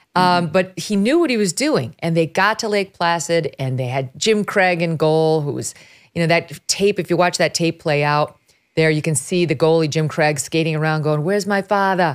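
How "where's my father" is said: put-on Boston accent, higher pitch. Describing the goalie skating around on old game tape: Jim Craig Boston accent. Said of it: "with his Boston accent".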